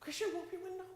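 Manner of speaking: put-on whisper. Retelling a safari moment to the audience, a lion nearby: retelling a whisper. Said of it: "so I'm just whispering".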